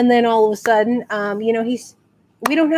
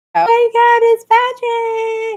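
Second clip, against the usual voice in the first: mock very high girl's sobbing wail; 12 semitones higher, 3 dB louder than usual. Retelling a girl's reaction on spotting a man, imitating a girl sobbing. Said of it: "the girl is just crying her eyes out".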